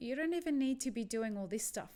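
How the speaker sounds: ordinary talk, nothing marked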